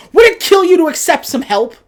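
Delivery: put-on outraged, super-indignant, very high and very loud. Retelling a character's reply after being turned down: imitating someone super indignant. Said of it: "super indignant about it".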